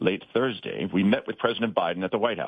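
bad TV news-anchor narration. Reading a news introduction aloud, trying Scott Pelley voice. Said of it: "I'll try to do my Pelley voice".

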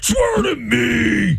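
very high-pitched angry voice, "me" drawn out. Asked to do Batman, the speaker tries a Batman impression.

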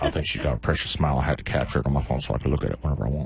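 put-on low, creepy elderly voice.

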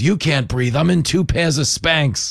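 put-on strong, pronounced New York accent. Speaker retelling a woman's remark as chaos broke out, in a pronounced New York accent. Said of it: "in a pretty pronounced New Yorkish accent goes".

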